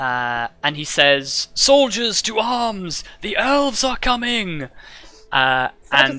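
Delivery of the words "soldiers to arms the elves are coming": ghostly, higher spectral voice carried on wind. Voicing a ghostly soldier who draws his weapon and calls his comrades: ghostly voice carried on the wind. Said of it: "in a voice that is ... on the wind".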